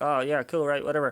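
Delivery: casual, relaxed, put-on American accent. Speaker quoting a guy from america in a story, put-on american accent. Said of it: "that was that was my American accent".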